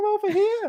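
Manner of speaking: very high-pitched cartoon-style voice. Calling Hugh over, doing a Mickey Mouse voice. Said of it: "that was my lame inte uh, impression of the Mickey Mouse".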